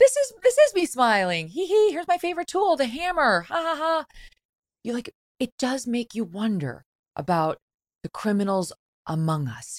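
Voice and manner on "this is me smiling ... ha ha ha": bouncy, very high, sing-song chipper cheer. Recalling a man's interview with a french interviewer, the speaker does a mock-chipper voice. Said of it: "And it's chipper".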